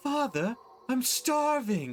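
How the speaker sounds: put-on young man's very high, desperate crying out. A game master voices someone calling from beneath the chapel floor, young man crying out. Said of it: "you hear a young man's voice cry out".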